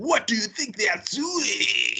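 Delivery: high-pitched, clumsy, mangled broken English. Describing an anime character who insists on speaking English, imitating horrible English. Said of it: "his English is like horrible".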